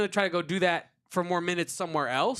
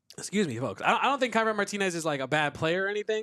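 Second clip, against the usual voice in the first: normal talking voice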